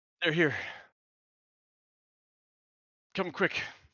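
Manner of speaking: acted breathlessness. Voicing a messenger who just ran up three flights of stairs: acted out of breath. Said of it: "slightly out of breath from three stories of stairs".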